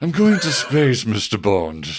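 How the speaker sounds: put-on older British actor voice. Imagining the villain's line as James Mason would say it: James Mason voice. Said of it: "older British actors of the era and just do that line".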